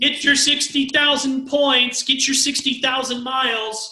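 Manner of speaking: mock slow, high, drawn-out hawking yell. Retelling what a lady standing there kept calling out: imitating a lady yelling. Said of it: "she's just yelling out".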